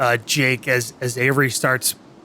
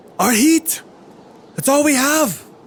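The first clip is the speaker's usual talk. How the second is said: put-on voice pitched much, much higher. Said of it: "he says".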